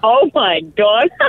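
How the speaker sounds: shocked, slow, high-pitched gasp.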